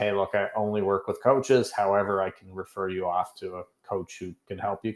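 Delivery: ordinary delivery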